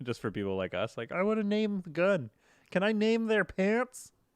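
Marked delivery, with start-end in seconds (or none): 1.1-4.1 very high-pitched, slow put-on voice. Joking about wanting to name things in the game: Kermit voice. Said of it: "This is the voice".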